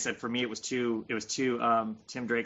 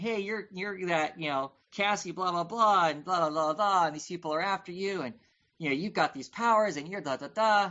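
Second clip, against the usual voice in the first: high, dismissive, obnoxious know-it-all tone; 8 semitones higher than usual. Retelling a comic scene, mocking Tim Drake as an obnoxious know-it-all. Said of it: "he's pointing at her going".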